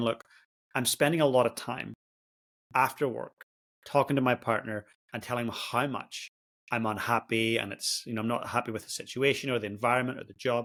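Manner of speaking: ordinary talk, nothing marked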